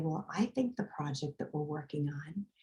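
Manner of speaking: very soft, quiet, barely-there voice. Retelling how a client spoke in meetings: imitating a very soft talker. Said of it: "She talked just like this".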